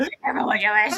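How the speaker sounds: put-on demonic-sounding voice. Retelling how a woman choked on a line, the speaker repeats it in a demon-like voice. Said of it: "so she sounded like a demon".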